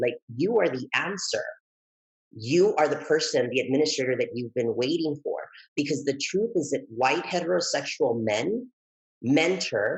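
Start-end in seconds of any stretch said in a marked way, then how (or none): none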